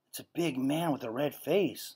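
soft, hushed half-whisper under the breath. Lydia, looking through the keyhole at the door, half-whispering to the narrator. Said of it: "she whispered".

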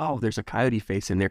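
ordinary talk, nothing marked

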